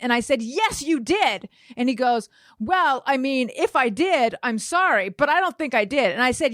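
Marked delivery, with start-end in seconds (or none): 0.4-1.5 mock heated, insistent, mildly angry yell. Retelling an argument with a man who denies hitting someone; retelling an angry yell. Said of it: "I'm like hurting my voice yelling like this".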